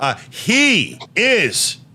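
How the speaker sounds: high, slow, drawn-out announcer-style call.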